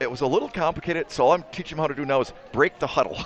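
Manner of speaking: ordinary talk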